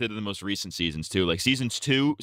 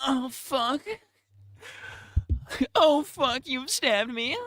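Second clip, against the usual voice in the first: slow whining, pitched very high. Acting out an imagined death scene where Rick stabs Shane: whiny Shane voice. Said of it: "in a whiny tone".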